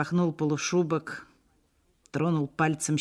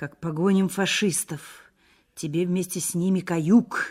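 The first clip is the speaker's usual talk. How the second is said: ordinary delivery, nothing marked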